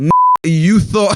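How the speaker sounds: stern, dismissive tone. Reading a letter where the girlfriend answers a teasing friend: stern retort. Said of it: "she responded stern with a".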